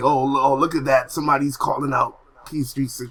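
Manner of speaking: ordinary talk, nothing marked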